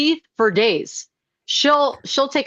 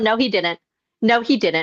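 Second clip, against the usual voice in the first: put-on voice, mimicked with flat delivery. Retelling a creator's denial of a TV statement: imitating Stella. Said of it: "and you're going".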